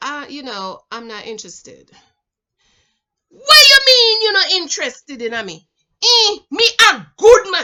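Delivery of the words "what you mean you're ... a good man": put-on Jamaican man voice, much higher, louder. Retelling men reacting when she says she's not interested: imitating a jamaican man. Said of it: "That's how they talk".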